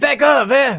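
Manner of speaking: put-on bad Italian accent, pitched very high. Redoing a joke line after saying they should have done the accent; bad Italian accent. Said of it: "That was bad Italian".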